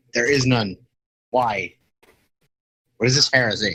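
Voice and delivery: ordinary talk, nothing marked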